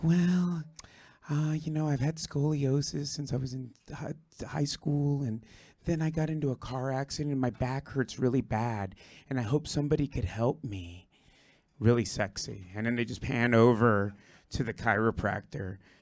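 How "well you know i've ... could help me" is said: put-on young girl's voice, halting at the start. Acting out a young gymnast telling a chiropractor about her back pain: imitating the young gymnast patient. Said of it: "she'll be like".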